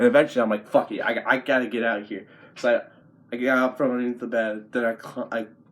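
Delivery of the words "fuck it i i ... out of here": ordinary delivery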